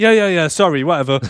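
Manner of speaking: put-on unbothered voice. Retelling a show scene after a shooting: imitating Liz's blasé reply. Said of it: "she just isn't bothered".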